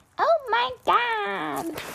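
put-on very high, vocal-fry valley girl voice, "god" stretched. Describing how a guy talks, imitating him in a valley girl voice. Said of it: "he talks like a valley girl".

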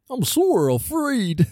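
very high-pitched cartoon-dog voice. Reading scripture aloud with another person, the speaker breaks into a Goofy voice. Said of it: "I always think of Goofy".

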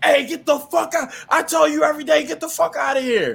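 shrill, very high, angry snapping rant. Retelling the gm throwing out a bum: imitating someone snapping angrily. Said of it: "Starts snapping like".

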